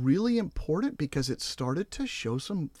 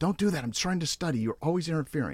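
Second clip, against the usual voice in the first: imitated angry outburst. Retelling a study partner's reaction to a second paper throw: imitating someone angry. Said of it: "she really kinda got angry".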